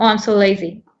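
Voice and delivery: ordinary talk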